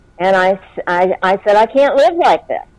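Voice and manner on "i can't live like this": put-on desperate scream, much higher, faster. Speaker retells bawling on the way to the store and crying out: retelling screaming at God. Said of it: "I started screaming to God".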